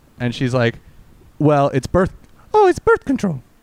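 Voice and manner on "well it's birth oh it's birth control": put-on mimicked swooping, high girl voice. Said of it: "Or I'll do the voice".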